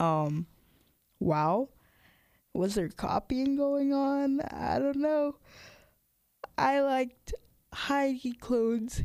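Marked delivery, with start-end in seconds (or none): 6.6-9.0 talking through a yawn, words broken up. Speaker discussing celebrity E.T. costumes, yawning while talking. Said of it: "Excuse me for yawning".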